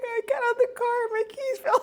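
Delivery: put-on very high, tearful, crying-through-it voice. Retelling meeting someone after dropping keys: retelling own tearful words. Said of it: "And I couldn't stop crying".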